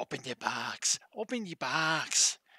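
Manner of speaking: tiny, slow little demon voice. Speaker acts out the voice inside him, in a little demon voice. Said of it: "the little demon voice in me goes".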